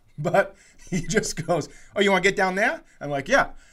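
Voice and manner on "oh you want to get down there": bad amateur Boston accent attempt, pitched up. Retelling what a man said to the speaker, in a bad boston accent. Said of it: "a bad Boston accent".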